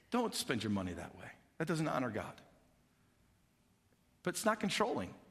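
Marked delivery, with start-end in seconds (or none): 0.1-2.3 gentle inner whisper, lower and quieter. Acting out the Holy Spirit's quiet warning to a listener: whispering as the Holy Spirit. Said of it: "he whispers into your heart and he goes".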